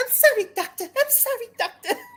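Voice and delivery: very high, feminine, helpless damsel voice. Describing an old-fashioned stage heroine's voice to a co-host, high feminine Audrey voice. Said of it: "high pitched like feminine like oh I need saving voice".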